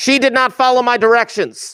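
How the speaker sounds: very high-pitched, shrill shout. Running a pick-a-number game after a player ignores the directions, yelling. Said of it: "I'm sorry for yelling".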